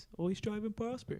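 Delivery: real goofy, silly, clowning voice. Signing off the show, quoting the absent Scrib in a real goofy voice. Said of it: "he'd say in a real goofy voice".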